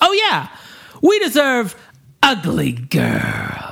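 drawn-out, high, proud and confident voice. Retelling Fester's line in a scene, mock-confident like Fester. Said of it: "and so confidently".

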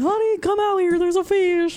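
very high hillbilly holler. Joking that finding a fish in the yard sounds hillbilly: put-on redneck voice. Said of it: "a redneck thing".

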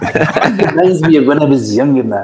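put-on speaking with South African accent. Speaker quotes what Mutt used to say to him, in Mutt's South African voice. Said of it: "I'm going to go to my South African voice".

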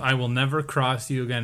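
normal talking voice

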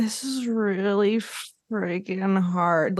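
put-on slow, slurred speech. Retelling how a girl on the show spoke: imitating slow, slurred speech. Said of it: "very slow and a little slurred".

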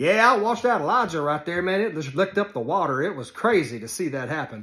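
put-on hillbilly voice. Imagining someone describing fire licking up water: put-on sarcastic hillbilly redneck voice. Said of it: "how sarcastic hillbilly redneck is that".

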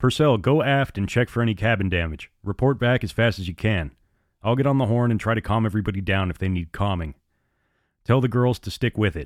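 plain

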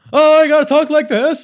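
very loud, high, booming arena announcer voice. Mocking how a wrestling commentator talked when starting out: echoey Michael Cole commentary voice. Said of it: "that echoey, like, reverb".

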